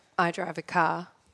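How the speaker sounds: native, natural Australian accent. The Australian producer, asked to say car, answering in an Australian accent. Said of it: "hear our Australian producer say car".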